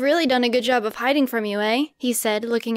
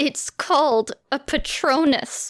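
through clenched teeth, higher, much slower; 3 semitones higher than usual. Narrator reads Moaning Joanne's reply to Harry, through gritted teeth. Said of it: "said through gritted teeth".

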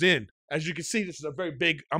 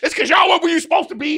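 furious, loud, very high-pitched yelling; 12 semitones higher, 7 dB louder than usual. Retelling getting mad over a ticket, the speaker reenacts yelling at them. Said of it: "I'm yelling at them".

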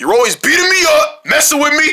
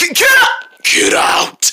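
very high, very slow, drawn-out menacing scary voice; 11 semitones higher than usual. One character speaking to another, in a scary voice. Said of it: "That scary voice is not gonna get me out".

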